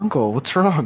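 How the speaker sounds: very afraid, fearful, frightened. Playing Marco asking his raging uncle a question: very afraid. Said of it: "he's clearly very afraid".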